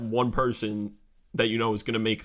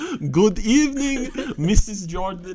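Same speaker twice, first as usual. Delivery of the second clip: put-on German accent, shrill, very high, loud; 11 semitones higher, 6 dB louder than usual. Retelling a funny scene, a man answers a woman: german accent. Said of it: "with a German accent".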